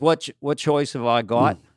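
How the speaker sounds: put-on a little touch of Australian accent. Retelling Mel Gibson's answer when asked about his faith; little Australian accent. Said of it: "I did a little Australian accent".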